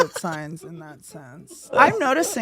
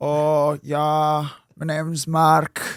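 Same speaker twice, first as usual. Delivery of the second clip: put-on Irish groundskeeper voice with Irish accent, lower; 5 semitones lower than usual. Imitating an acquaintance introducing himself: Irish accent imitating Mark. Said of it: "sound like a fucking groundskeeper".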